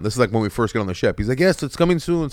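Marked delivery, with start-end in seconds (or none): 1.4-2.3 put-on pitched-up Jamaican accent, leaned into heavily. Retelling what a Jamaican man on the ship said, in a Jamaican accent. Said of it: "easy with the accent".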